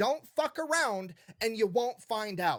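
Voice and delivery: slow, deliberate, spelled-out delivery. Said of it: "I'm gonna say it real slow".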